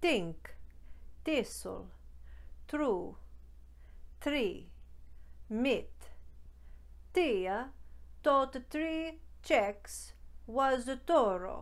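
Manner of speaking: put-on Italian accent in English. In an accent tutorial video, demonstrating T and D sounds in an Italian accent. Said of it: "mastering the Italian accent".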